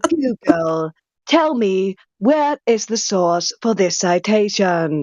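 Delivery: slow, put-on British accent. Talking to Google so it understands, in Big Brother-style put-on British accent. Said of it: "I pretend to be British ... I copy the voice I keep hearing from Mom's T V".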